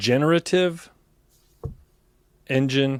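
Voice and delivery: slow, drawn-out words with deliberately stretched syllables. Repeating a new term back to the presenter, spoken slowly. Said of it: "I'm just saying that slow".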